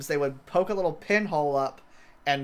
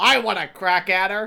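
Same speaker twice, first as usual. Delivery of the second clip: put-on girl voice, louder; 4 semitones higher, 5 dB louder than usual. Describing the girl in the prison cell, put-on voice of caged girl. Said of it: "I don't know why we both did that voice".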